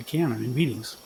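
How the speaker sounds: plain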